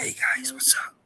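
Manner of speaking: hushed, whispered, kept low. Greeting viewers while trying to keep the voice down: talking quiet. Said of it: "So I'm trying to talk quiet".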